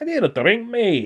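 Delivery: put-on Scottish voice, very high-pitched and very loud. Showing how a Scottish guy speaks: put-on Scottish accent. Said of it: "Or a Scottish guy".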